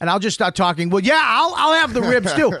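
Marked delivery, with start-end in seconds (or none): 0.9-2.5 play-acted talking, loud and pitched up. Retelling talking over a loud woman in a restaurant: retelling talking loudly. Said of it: "I just start talking as loud as her".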